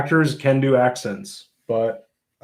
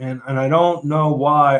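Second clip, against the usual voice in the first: plain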